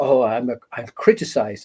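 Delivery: ordinary talk, nothing marked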